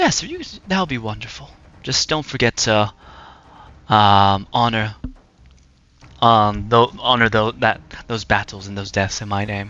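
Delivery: close, intimate voiced whisper. Voicing an unseen presence answering a deal, whispering in the ear. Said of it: "hear a whisper in your left ear".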